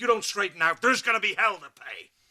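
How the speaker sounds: stern, threatening, angry scolding with rising pitch. Speaker showing how they'll tell her off, in a stern angry voice. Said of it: "I'm gonna use the voice and pound the fist".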